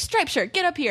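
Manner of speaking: high-pitched shout projected loudly to carry far. Retelling calling the crowd forward at a show: imitating her own shouting. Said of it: "I'm still, like, shouting".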